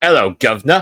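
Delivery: very loud, high, very poor Cockney accent. After giving their social media handle, the speaker greets in a very poor Cockney accent. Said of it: "very poor attempt at a Cockney accent".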